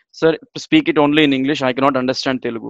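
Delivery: normal talking voice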